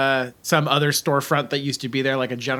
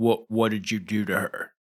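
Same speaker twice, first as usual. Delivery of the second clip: grunted, deep delivery; 4 semitones lower, 4 dB quieter than usual. Recounting a scene, voicing a man who leans in close: retelling a grunting man. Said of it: "He grunts and he says".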